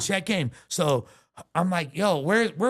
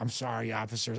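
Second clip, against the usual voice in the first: soft, low, overly polite, apologetic tone; 7 semitones lower, 9 dB quieter than usual. Retelling apologizing to police officers, retelling an overly polite apology. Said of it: "I'm like the nicest I've ever been to the police".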